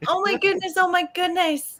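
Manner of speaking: put-on very high, shrill little-girl voice. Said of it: "you sound like the girl from Annie".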